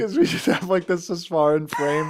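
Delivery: speech mixed with laughter. Explaining to another speaker why they are laughing: laughing while talking. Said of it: "You wanna know why I'm laughing?".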